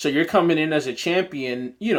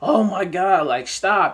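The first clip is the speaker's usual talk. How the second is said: long, stretched, slow, drawn-out screaming cry; 4 semitones higher than usual. Recapping a challenge episode, acting out the way she screamed: imitating Esther screaming. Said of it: "like the way she screamed".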